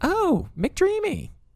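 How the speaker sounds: put-on heavy, thick Southern accent, very high-pitched. Speaker quotes a former high school teacher, imitating Kelly Burrell's southern accent. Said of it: "she said it with a thick southern accent".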